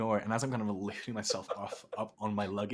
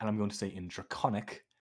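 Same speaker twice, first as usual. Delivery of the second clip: plain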